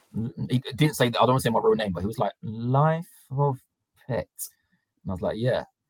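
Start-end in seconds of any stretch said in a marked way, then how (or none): 2.5-4.3 put-on, slightly broken delivery, much slower, quieter. Retelling how the man who took the passport read out the name, a bit broken. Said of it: "he said it like a bit broken".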